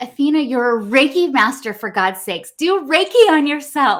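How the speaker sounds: very loud, high, desperate pleading cry. Retelling the husband's words in the hospital room: imitating a desperate plea. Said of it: "in this desperate plea".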